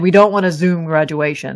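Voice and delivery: plain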